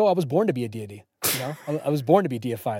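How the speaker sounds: bone-dry, matter-of-fact tone. Quoting Chase's reply when asked how it felt to be deified, retelling a deadpan reply.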